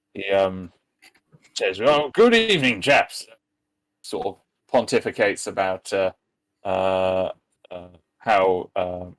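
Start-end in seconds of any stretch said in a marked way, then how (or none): 1.8-3.3 put-on fast, gruff, blustery old-fashioned voice. Retelling how a man greeted them on a video call, blustering old-world voice. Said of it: "blustering sort of old world sort of voice".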